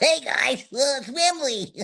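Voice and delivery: very high-pitched puppet character voice. Showing another puppet and voicing it: Wembley voice. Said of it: "And then we have Wembley".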